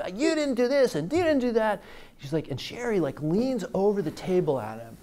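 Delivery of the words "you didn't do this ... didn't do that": very high-pitched, shrill yelling tirade. Retelling how a guy at a sales call yelled: imitating a guy yelling. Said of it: "this guy started yelling at Sherry".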